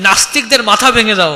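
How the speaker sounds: normal talking voice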